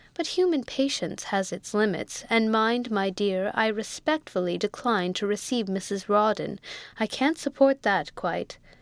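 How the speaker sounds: ordinary delivery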